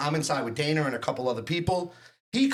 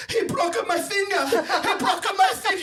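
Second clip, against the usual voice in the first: very high, put-on broken-English Russian accent; 4 dB louder than usual. Retelling what the bouncer with a broken finger said: imitating a Russian accent. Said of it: "The guy speaks, like, Russian".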